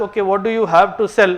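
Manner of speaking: ordinary talk, nothing marked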